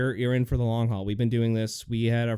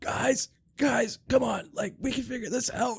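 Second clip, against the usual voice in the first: imitated lost, hoarse voice, much higher; 13 semitones higher than usual. Retelling how a friend pushed to start a podcast, imitating a lost, hoarse voice. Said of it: "you had like lost your voice".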